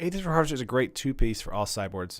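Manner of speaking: ordinary delivery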